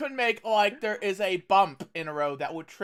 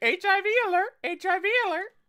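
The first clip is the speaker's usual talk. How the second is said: very high, squawking bird call. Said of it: "Phoenix will fly over him saying".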